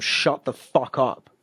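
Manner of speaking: slow, drawn-out yelling. Retelling shouting at someone screaming with a thorn in his foot: imitating own shout. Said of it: "I shouted at him".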